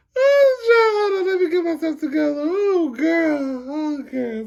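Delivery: high, breaking-up, helpless laughter. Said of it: "See, I'm already laughing".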